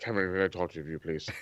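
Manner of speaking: hushed, dead calm, soft and composed tone. Retelling how William Regal spoke to Cameron: calm William Regal impression. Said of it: "like, super calm and shit".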